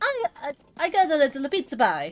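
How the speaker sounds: put-on sing-song American Italian accent. Retelling how an actor got a plumber role: imitating Charles Martinet's Italian-American accent. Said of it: "American Italian accent".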